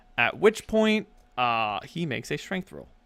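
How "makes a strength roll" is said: ordinary talk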